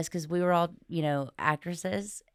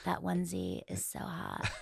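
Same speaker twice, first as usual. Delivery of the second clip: put-on whispery, breathy, high baby-talk voice; 8 dB quieter than usual. Riffing on a suggested bit about a baby: Paris Hilton baby voice. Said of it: "that baby voice that she has to a baby".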